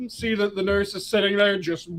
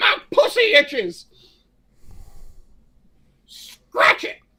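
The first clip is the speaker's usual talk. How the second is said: put-on old woman voice, yelling bluntly; 13 semitones higher than usual. Telling a story about an elevator, the speaker imitates an old woman yelling. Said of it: "this old woman yells".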